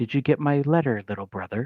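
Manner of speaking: close, hushed whisper in the ear. Narrating a scene to a player, a figure behind them speaks: whispered in the ear. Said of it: "you simply hear whispered in your ear".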